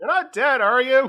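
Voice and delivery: very high, very loud voice, calling out. Voicing Graves checking on someone after a fight: calling out in character. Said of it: "Graves calls out".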